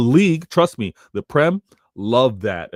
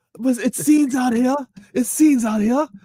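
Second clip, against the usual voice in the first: very high, fake British accent; 13 semitones higher than usual. Wrapping up the show, joking with the other speaker: fake UK accent. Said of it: "my fake U K accent".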